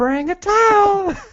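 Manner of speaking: mock public service announcement voice.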